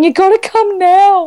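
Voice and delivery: very high-pitched, slow, tearful crying voice. Retelling a phone call to mum: imitating own past crying. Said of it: "on the phone in tears going".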